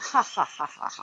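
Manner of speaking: cold, sneering, insidious fake laugh. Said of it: "Then they started to laugh".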